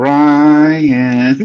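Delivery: put-on spooky horror-movie style delivery. Retelling how a name was said in court, like a horror movie. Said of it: "I was saying it like Margarita said it, like a horror movie".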